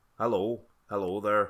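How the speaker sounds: put-on Northern Irish, Ulster accent. Taking turns doing british accents, number two, northern irish accent. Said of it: "Northern Irish".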